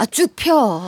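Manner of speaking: drawn-out Chungcheong dialect speech. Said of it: "충청도 사투리로 바꾸면".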